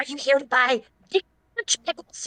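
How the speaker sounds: put-on fantasy goblin character voice. Told to try the goblin voice again, the speaker retries: goblin voice. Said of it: "Try the goblin voice again".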